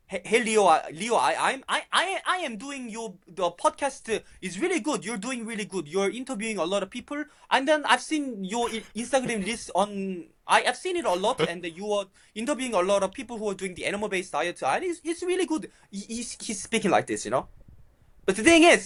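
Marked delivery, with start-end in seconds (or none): 0.1-15.7 put-on laid-on, strong Korean accent. Imitating his dad praising his podcast, in a strong Korean accent. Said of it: "he has this like strong Korean accent. Uh, He speaks like this".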